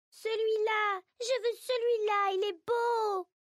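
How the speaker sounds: put-on piercing, shrill, very high little-girl cry. A child points at the cat she wants through the window; horrible shrill little voice. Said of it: "s'écrie avec une horrible petite voix aiguë".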